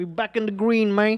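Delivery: attempted New York accent. Cheering AMC back on green, trying it out: attempted New York accent. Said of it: "I don't know if that was a good New York accent".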